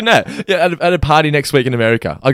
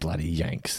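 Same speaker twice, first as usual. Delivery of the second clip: put-on muttered under breath, broad Australian accent, lower, quieter; 9 semitones lower, 16 dB quieter than usual. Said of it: "Even under his breath".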